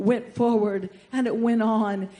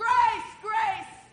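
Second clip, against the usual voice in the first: loud, high ringing call. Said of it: "you need to shout".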